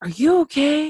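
high-pitched, loud, worried tone.

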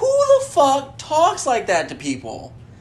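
high, loud cry of outraged disbelief.

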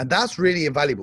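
normal talking voice

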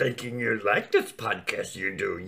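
put-on little alien sage voice. Talking about a baby toy, doing a Yoda voice. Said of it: "It's the only one I can do".

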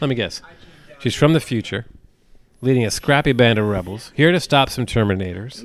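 ordinary talk, nothing marked

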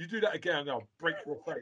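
furious, fuming man's voice, high and hushed. Retelling a man on London transport turning on someone, acting out him losing it. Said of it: "like literally losing it".

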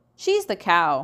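usual speaking voice

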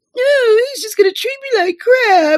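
put-on very high-pitched, hysterical boyfriend voice. Acting out a man's complaint about someone else, imitating a hysterical boyfriend. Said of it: "you sound like a fucking hysterical boyfriend".

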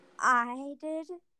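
put-on, scared-stiff, terrified little kid's voice. Retelling a kid answering a teacher shouting into the hall; imitating a terrified kid. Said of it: "with the most terrified voice".

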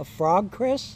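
ordinary talk, nothing marked

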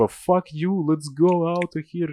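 re-enacted yell. Retelling what they shouted to a Swedish guy, retelling a shout. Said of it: "кричав тому шведу".

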